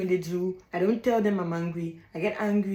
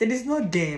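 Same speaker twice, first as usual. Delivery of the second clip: speaking through laughter, higher pitch; 3 semitones higher than usual. Telling listeners that others have no power over them, laughing while talking. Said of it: "I'm sorry I'm laughing".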